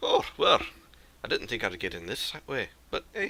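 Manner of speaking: small, swooping, sing-song dwarf voice. Game master voicing a dwarf who snuck in behind the party, Alder's small dwarven voice. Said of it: "you hear a small dwarven voice behind you go".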